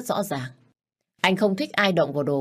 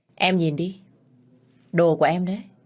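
plain reading voice

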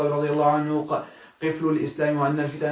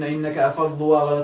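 plain

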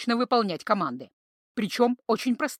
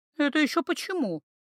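sulky, pouting, offended, put-out, pitched up; 5 semitones higher than usual. The guardian of order and justice reacts to Iva's remark; pouting, offended. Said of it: "надулась блюстительница порядка и справедливости".

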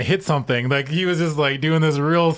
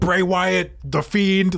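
slow, drawn-out, put-on angry tone; 3 semitones higher than usual. Retelling a satellite interview where Goldberg acts all mad: imitating Goldberg acting mad. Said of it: "acts all mad".

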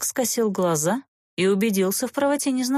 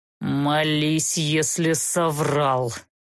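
angry, through clenched teeth, much slower; 5 semitones lower than usual. The crossbowman answers the mocking serpent, angrily through gritted teeth. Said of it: "Зло процедил арбалетчик".

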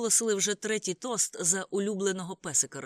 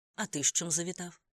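ordinary delivery, nothing marked

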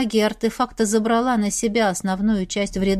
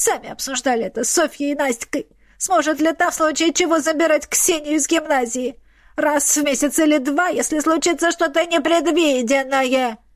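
high, mocking delivery; 5 semitones higher than usual. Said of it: "передразнила его Ульяна".

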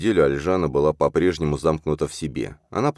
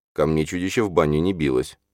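usual speaking voice

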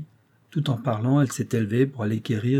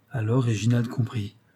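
plain

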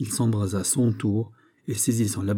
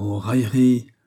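murmured under breath; 3 dB louder than usual. Reading a novel aloud, the king responds to a young woman's plea; murmured. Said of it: "murmura le roi".

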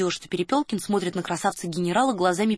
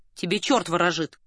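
ordinary delivery

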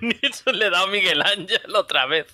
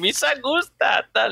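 high, creaky, goofy alien voice; 5 semitones higher than usual. Retell how Colin Robinson starts answering Laszlo, in a Jar Jar Binks voice. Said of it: "hablando con la voz de Jar Jar Binks".

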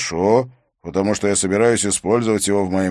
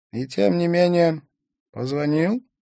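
drowsy, just-woken voice, pitched a bit high; 9 semitones higher than usual. Narrator reads a character answering a phone call, in a sleepy voice. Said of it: "произнес Столь Эвне сонным голосом".

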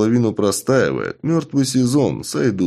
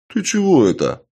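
fake offended, hurt tone, pitched up; 8 semitones higher than usual. A short man, just insulted in reply to his greeting, feigning offense. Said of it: "притворно обиделся коротышка".

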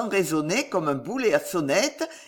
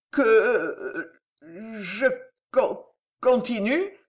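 terrified stammering, much slower; 3 semitones higher than usual. A nephew answers his mocking old uncle with a question, stammering in terror. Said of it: "bégaya Gillot au comble de la terreur".

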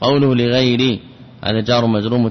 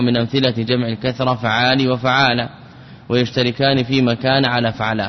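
plain

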